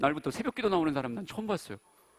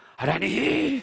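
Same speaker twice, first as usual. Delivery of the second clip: put-on high, bear-like, howling, wailing cry; 5 semitones higher than usual. Retelling a big man praying at dawn: imitating a bear-like roaring cry. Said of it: "진짜 곰이 울부짖는 거 같아요".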